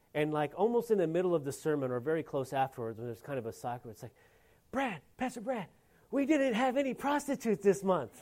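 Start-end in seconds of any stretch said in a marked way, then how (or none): 4.7-8.2 broken non-native English, pitched up. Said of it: "in their broken English".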